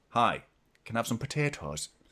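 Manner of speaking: put-on Irish accent. Imitating how a woman from Manchester talks, in an Irish accent. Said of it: "says potatoes in an Irish accent".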